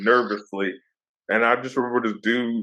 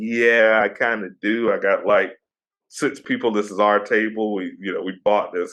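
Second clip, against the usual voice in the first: normal talking voice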